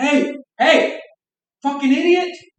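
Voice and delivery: very high, stretched-out, drawn-out screaming. Retelling how a guy came at them near the otters: imitating someone screaming. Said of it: "came screaming at me".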